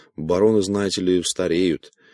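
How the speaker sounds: ordinary delivery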